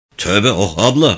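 ordinary delivery

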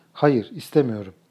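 ordinary delivery

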